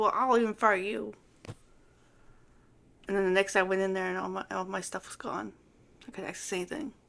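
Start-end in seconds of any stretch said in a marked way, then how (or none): none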